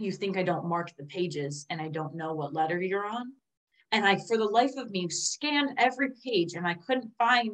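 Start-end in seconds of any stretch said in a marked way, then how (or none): 0.0-3.3 calm, quiet, menacing tone. Recalling what he said when she tried reusing the pages, retelling a calm, scary tone. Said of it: "in the calm, scary tone".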